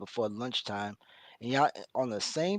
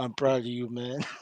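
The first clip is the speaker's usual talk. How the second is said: mock crying, put-on crying sound; 4 dB louder than usual. Retelling what the Team Fatty guy said: imitating someone crying. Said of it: "the Team Fatty guy crying like".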